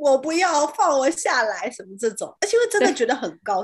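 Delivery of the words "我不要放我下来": slow, drawn-out panicked cry, each word spaced out. Retelling shouting from up high to be let down, retelling panicked shouting. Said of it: "我是直接在上面大喊说".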